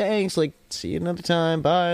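acted, cheery, friendly, high shouted voice. Retelling leaving with friends and calling back to her, retelling yelling nicely. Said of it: "we're all like yelling at her".

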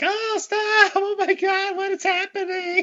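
very high, stretched-out, drawn-out shriek. Retelling a film scene, imitating a screaming woman. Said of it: "I know she's screaming".

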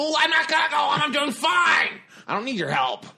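shrill, very high, loud, swooping sing-song dad voice. Retelling how a contestant refused help from her team: imitating Eula. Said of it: "That's my impression of Eula".

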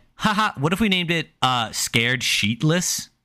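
put-on playful joking tone. Retelling how he jokingly suggested a name, not as a real option. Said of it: "he jokingly".

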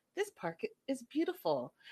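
awed, swooping first-time amazement. Retelling how a woman in the show greeted the park: imitating someone seeing it for the first time. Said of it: "she says it like she's never been there before".

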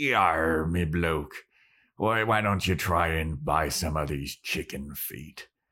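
slow pirate character voice. Retelling an episode scene where Xander sells to a kid: imitating Xander's pirate voice. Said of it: "he's dressed up like a pirate".

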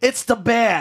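very high, shrill thug holler. Comparing someone's look to a game henchman, then acting him out: mock Arkham henchman yell. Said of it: "the henchman in an Arkham game who yells".

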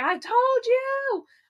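play-acted shrill scream, very high pitch. Retelling watching a match win as predicted: retelling own screaming. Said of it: "why I was screaming".

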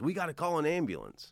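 put-on, high-pitched shouted yell. Retelling a fall, quoting the man who lifted the speaker up, imitating a man yelling. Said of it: "and he yells".

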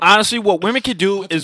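very loud yelling. Talking about women's basketball into a microphone, yelling. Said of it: "Don't need to yell".

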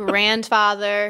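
slow, amused, laughing voice.

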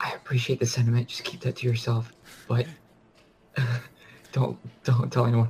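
quiet, hushed, confiding whisper. Playing a cleric, the speaker whispers to her, in a quiet whisper. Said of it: "quietly whisper to her and say".

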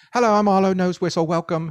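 put-on very high-pitched British accent. Host recalling a made-up character used for show segments: Arlo's British accent. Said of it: "He's this British guy".

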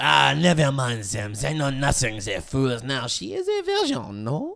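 mock French-sounding voice. Acting out Deschamps greeting Jules in a skit: Deschamps voice. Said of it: "Deschamps convinced Jules to let him borrow".

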